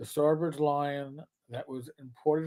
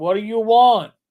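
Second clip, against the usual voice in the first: very loud, high-pitched put-on New York accent; 7 semitones higher, 12 dB louder than usual. Speaker apologizes for having a New York accent: New York accent. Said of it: "I got a New York accent".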